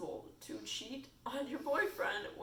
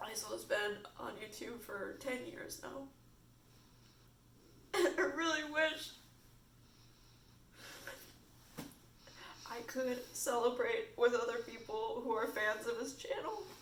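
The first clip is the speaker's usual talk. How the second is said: tearful, crying while talking. Talking to another speaker while crying, tearful speech. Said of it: "I am sorry that I'm crying".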